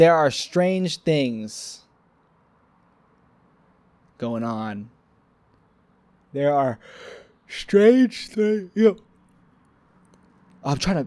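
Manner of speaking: speech broken by yawning. Speaker chatting to listeners, trying not to yawn: yawning while talking. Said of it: "I'm trying not to be yawning".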